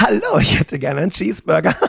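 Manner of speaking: play-acted delivery, giggling at start and end. Imitating a customer ordering a cheeseburger at McDonald's, imitating a giggling customer. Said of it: "sondern das geht dann so".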